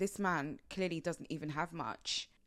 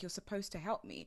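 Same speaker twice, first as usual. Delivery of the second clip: mock crying, pleading, quieter; 4 dB quieter than usual. Speaker acting out a woman's message to him, imitating her crying. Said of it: "her literally crying like".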